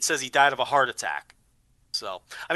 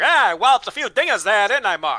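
put-on old-timey voice, pitched up and loud; 7 semitones higher, 5 dB louder than usual. Retelling a player's answer in old home run interviews: old-timey voice. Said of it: "old-timey voice".

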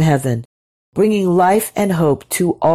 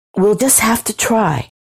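hissed, stubborn and defiant; 4 semitones higher than usual. A woman answers her companion, hissing defiantly. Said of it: "she hissed defiantly".

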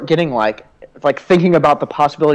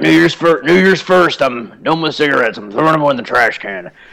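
put-on heavy-smoker voice. Explaining a theory on resolutions, acting out a smoker quitting in a put-on smoker voice. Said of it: "Smoker voice".

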